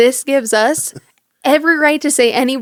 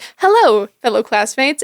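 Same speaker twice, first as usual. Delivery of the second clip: acted, mock-formal, clinical tone. Speaker recalls presenting to classmates, in a mock-formal clinical tone. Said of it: "keep it kind of clinical in the way".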